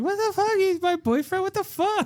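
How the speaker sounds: put-on very high, childlike little kid voice. Recalling how Brooke talked since age six: imitating Brooke as a six-year-old. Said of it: "Brooke has talked like that since she was, like, six years old. She would be like".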